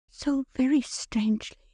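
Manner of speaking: very high-pitched, echoing delivery. Reading a story aloud, a wife's quiet reply: low, barely audible voice. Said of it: "she rejoined in a low voice, scarcely audible".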